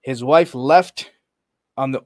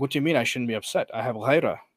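ordinary talk, nothing marked

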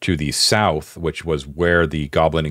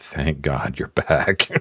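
really gentle, hushed, soft, slow murmur; 2 semitones lower than usual. Voicing a character who approaches the group on their return, speaking softly. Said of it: "she says really softly".

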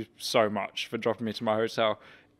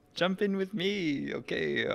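put-on high, very slow accented voice, every word stretched; 7 semitones higher, 4 dB quieter than usual. Retelling a driver offering a ride outside a hotel, doing a Fernando Alonso impression. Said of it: "Great impression".

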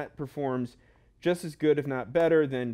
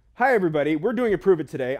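fast, loud, rushed, rattled-off delivery; 3 semitones higher, 6 dB louder than usual. Host opening a video introduction after many tries, talking really fast. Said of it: "I'm talking really fast".

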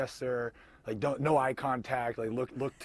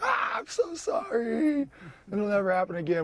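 very high, drawn-out, tearful sobbing voice; 9 semitones higher, 6 dB louder than usual. Telling how he was ordered out of a car, acting out crying while apologizing. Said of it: "I was crying".

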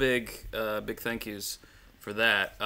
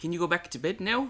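put-on Australian accent, pitched up; 8 semitones higher than usual. Telling Chris to go back to bed: put-on Australian accent. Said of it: "No one likes it when you do your Australian accent".

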